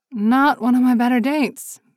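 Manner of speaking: mumbled under the breath. Woman answering a man after an altercation with her date: muttered. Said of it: "she muttered".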